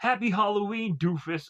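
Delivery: high, goofy cartoon-style voice. Describing the characters, imitating how Bones says his line, goofy Bones voice. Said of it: "goofy, almost kind of like Ninja Turtle-ish like voice".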